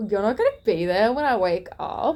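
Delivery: play-acted affronted, wounded, put-out tone. Retelling the other speaker's reaction to a saturday shift: imitating someone offended. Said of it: "He's so offended because he's like".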